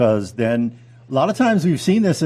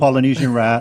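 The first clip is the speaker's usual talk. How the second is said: plain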